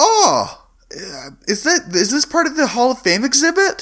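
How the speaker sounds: put-on curious, childlike kid voice.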